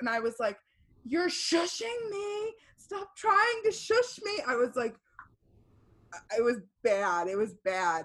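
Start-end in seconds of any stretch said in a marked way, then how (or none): 1.0-4.4 yelling, pitched very high. Retelling a late-night argument with someone who kept shushing, retelling a yell. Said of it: "I'm like yelling".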